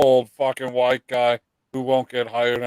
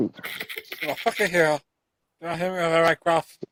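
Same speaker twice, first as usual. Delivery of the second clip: bad put-on voice with a lisp, higher; 4 semitones higher, 4 dB quieter than usual. Repeating the line to the boxer: terrible Mike Tyson impression with a lisp. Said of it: "That's terrible, too. Sounds like you got a lisp".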